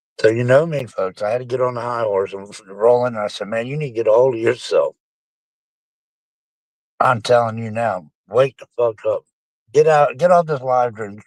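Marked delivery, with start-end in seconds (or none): none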